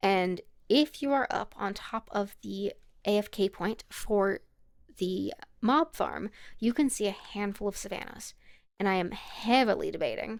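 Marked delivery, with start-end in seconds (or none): 9.1-9.9 "heavily" said with heavy weight. Talking through plans near the mob farm, stress on heavily. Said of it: "emphasis on heavily".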